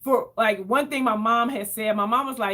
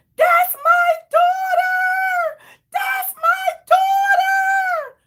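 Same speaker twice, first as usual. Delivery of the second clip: very high, loud shrieking scream; 7 dB louder than usual. Retelling how a lady reacted when she heard the name, imitating her screaming. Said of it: "the lady started screaming".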